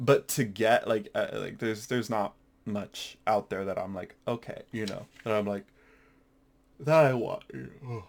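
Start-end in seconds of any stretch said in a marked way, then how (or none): 5.2-8.0 talking through a yawn. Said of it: "Sorry, I'm yawning".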